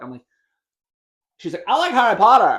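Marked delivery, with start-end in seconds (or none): 1.7-2.6 put-on shrill, very high, loud, drawn-out girl voice. Quoting a girl he's talking to, imitating a girl's voice. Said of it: "the way that you do that voice when you repeat, like, what girls sound like".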